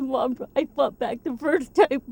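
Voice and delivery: tearful, crying voice. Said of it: "and he starts crying".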